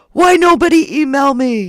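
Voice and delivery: slow, high, drawn-out big monster voice. Speaker plays a big angry monster character as a joke, then complains nobody emails them, in a big green monster voice. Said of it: "I'm doing his voice".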